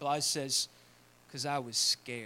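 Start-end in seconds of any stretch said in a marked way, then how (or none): 1.3-2.3 put-on Southern accent, pitched much lower. Retelling a scene, answering the other character's question in Blythe's southern accent. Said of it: "in his southern accent".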